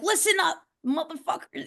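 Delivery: fired-up angry outburst. Speaker acts out how they sound online when angry, mock-angry outburst. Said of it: "when I do hop on the internet and I'm like kind of angry".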